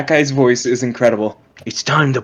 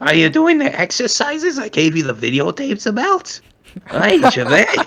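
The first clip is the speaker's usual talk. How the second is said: badly done put-on old lady voice with accent; 8 semitones higher than usual. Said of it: "I can't do an old woman voice".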